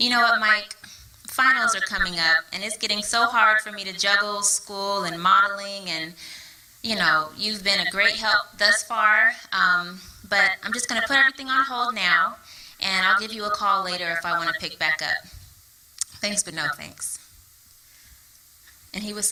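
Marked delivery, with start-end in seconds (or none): none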